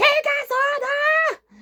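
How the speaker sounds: high, slow, angry shout. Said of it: "shouts out angrily".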